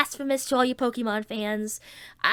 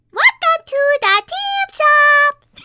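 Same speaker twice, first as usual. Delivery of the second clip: shrill, very loud, very high squeaky cartoon critter squeal; 10 dB louder than usual. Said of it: "I'm more of a Tammy".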